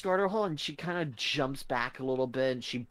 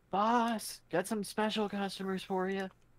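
high, loud, hollering voice; 7 semitones higher than usual. Narrating the game, the speaker voices a woman calling back to her boss, hollering. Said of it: "you hear her holler".

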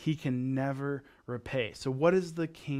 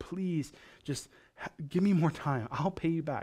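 put-on begging, much higher; 3 semitones higher than usual. Retelling a man on his knees begging his master: mock begging. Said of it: "he drops on his knees and he begs".

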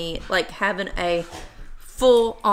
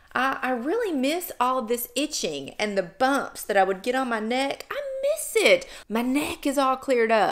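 heavily sarcastic, mock complaining tone. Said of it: "I'm being totally sarcastic".

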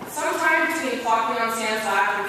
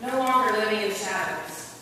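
plain

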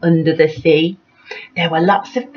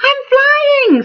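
very high, thrilled, excited exclamation; 4 dB louder than usual. Narrator reading Flip-Flop as he floats up on a balloon, excited. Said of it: "said Flip-Flop excitedly".

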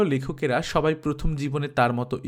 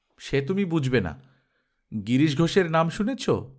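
plain reading voice

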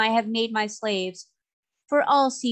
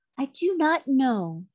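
very slow, unhurried, drawn-out delivery; 4 semitones higher than usual. Answering the queen's question about destroying the mermaids, a quiet answer. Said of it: "was the quiet answer".

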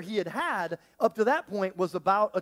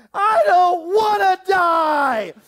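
shrill, very high, loud, drawn-out terrified wail; 11 semitones higher, 10 dB louder than usual. Retelling a frightened eight-year-old in a storm: imitating a child yelling in fear.

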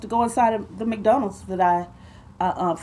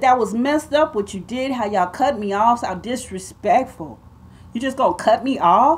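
ordinary talk

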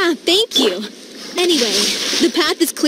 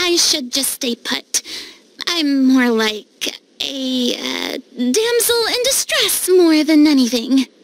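smug, self-satisfied, preening tone; 3 semitones lower than usual. Declining to fight and staying put, sounding smug. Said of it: "That sounded so smug".

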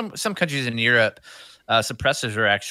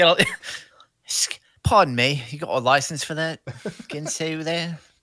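bad fake English accent, higher pitch; 5 semitones higher than usual. Joking with a co-host about registering knives, in a horrible English accent. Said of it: "horrible English accent, sorry".

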